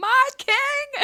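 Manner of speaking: high-pitched shouting.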